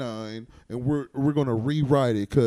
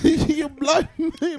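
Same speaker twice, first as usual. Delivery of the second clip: very high, bad Caribbean accent; 4 dB louder than usual. Trying to sound British during a group joke, Caribbean-sounding accent. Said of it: "That sounded Caribbean".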